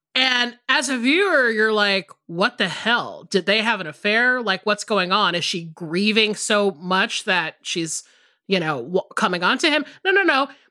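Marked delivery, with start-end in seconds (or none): none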